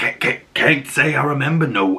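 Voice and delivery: put-on pirate accent skipping and stuttering like a glitch. Recapping a story, quoting a character who glitches while answering: glitching pirate accent. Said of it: "he's got this great pirate accent".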